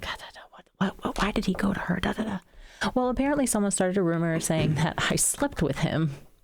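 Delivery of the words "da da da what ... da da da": hushed, nosy, chattering gossipy whispered murmur. Retelling how onlookers gossiped after a hug: imitating people whispering.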